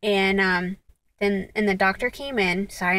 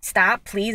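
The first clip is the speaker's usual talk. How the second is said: mock pleading, begging tone. Retelling asking someone to remove her hand: retelling own begging. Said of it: "and begging, like".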